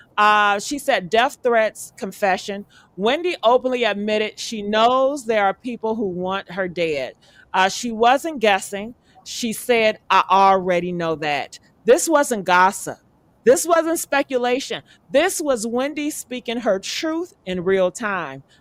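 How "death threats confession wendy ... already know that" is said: ordinary delivery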